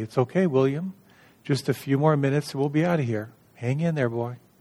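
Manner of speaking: put-on calm, controlled, soothing tone. Retelling a grandfather calming a screaming little boy, imitating a calm voice. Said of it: "the grandfather calmly say".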